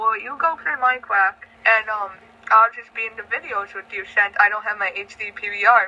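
ordinary talk

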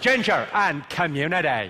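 accent from Belfast. Teaching the audience a phrase to nail the accent, in a Belfast accent. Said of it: "the phrase I use to get the Belfast accent right".

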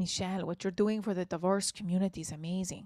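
clumsy, soft put-on Latin accent drifting Lebanese. Retelling what a man said to her on their first talk: bad latin accent. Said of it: "I am not good at a Latin accent".

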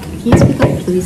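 normal talking voice

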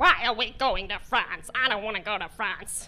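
obnoxious, low, muddled American man's grumble. Hurrying the Cabots toward the Eurostar, the speaker voices Mr. Cabot's reply: imitating Mr. Cabot. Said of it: "[name] was a large, obnoxious, loud American man with Alzheimer's disease".

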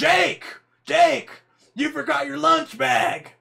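hoarse, loud voice. Speaker imitates the kids' mother calling to her son, raspy mom voice. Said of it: "she had the raspy voice".

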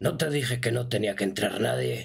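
cold, contemptuous, menacing crime boss voice. A game master voicing a crime boss scolding the guard who brought visitors, menacing crime boss voice.

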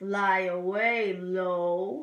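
deep bird voice. Doing the two blackbirds rhyme, low voice for blackbird Lo. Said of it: "That was fun to make my voice do that".

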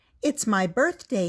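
plain reading voice

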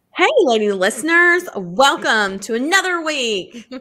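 big, loud, hyped game-show host voice. Opening a romance podcast episode for listeners, game-show host voice. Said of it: "Game show. Woo! Host. I don't know why I automatically do that voice".

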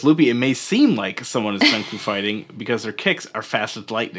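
ordinary delivery

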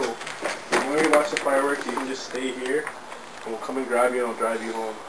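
low, murmured, soothing tone.

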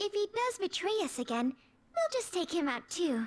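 sugary sweet voice. A character speaks to her group about a possible traitor, in the sweetest voice. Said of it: "said it with such the sweetest voice ever".

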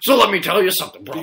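very loud wrestler shout. On the Wrestling Burn, a host says he can do it himself: Hulk Hogan impression. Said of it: "you don't do it like him".

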